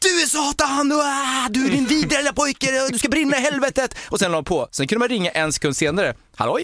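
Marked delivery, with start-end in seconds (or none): 0.0-3.9 very high, shrieking, snapping screaming outburst. Retelling how a woman finally snapped at a prank caller, imitating her screaming. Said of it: "hon bara skrek så".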